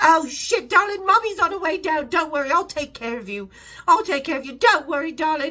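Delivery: high, loud English voice. Retelling a phone call from Sharon Osbourne: imitating Sharon Osbourne's English voice. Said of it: "a tiny little English voice".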